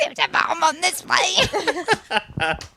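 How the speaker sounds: slow smoker voice. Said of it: "you did the smoker voice".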